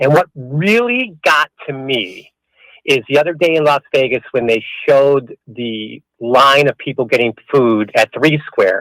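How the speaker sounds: mock-sincere, sarcastic delivery. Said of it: "you're being sarcastic".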